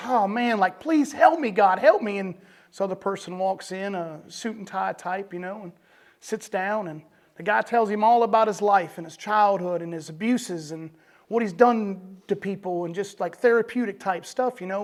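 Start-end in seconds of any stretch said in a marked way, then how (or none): 0.0-2.2 put-on screaming plea, male voice. Telling a story about a man left in a hole, imitating a man screaming. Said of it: "the guy's screaming like".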